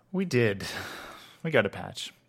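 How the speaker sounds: unexcited, underwhelmed, lacking any enthusiasm. Replying to the other speaker about the game, not sounding excited. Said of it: "you don't sound excited".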